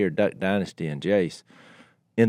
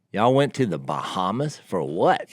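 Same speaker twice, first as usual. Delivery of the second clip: usual speaking voice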